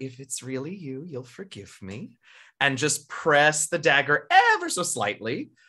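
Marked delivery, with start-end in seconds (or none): 0.0-2.2 rapid, hushed, very quiet half-whisper. Explaining a plan to stand behind someone with a dagger, quick half-whisper. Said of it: "very quickly whisper".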